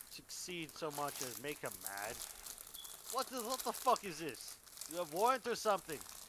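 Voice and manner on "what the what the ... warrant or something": loud, pitched-up, angry, fake bad Slavic accent. Voicing a man who demands to see a warrant, in a bad Slavic accent. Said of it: "my bad Slavic accent".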